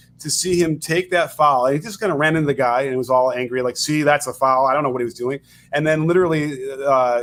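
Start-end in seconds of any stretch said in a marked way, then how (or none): none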